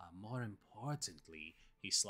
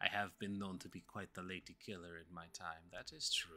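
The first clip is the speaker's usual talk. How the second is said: soothing put-on accent, quieter; 2 semitones lower, 9 dB quieter than usual. In a role-play, a world-famous traveler replies to being called a charmer, soothing voice, put-on accent. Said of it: "I am a world-famous traveler, author, connoisseur, adventurer, ... Happy to regale you with more of my soothing voice. ... I like your accent".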